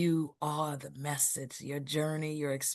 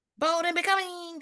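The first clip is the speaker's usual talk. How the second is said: very high, loud, cartoonish put-on voice; 7 dB louder than usual. Praising Erica, one speaker breaks into a Lady K voice. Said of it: "I'm thinking of a cartoon".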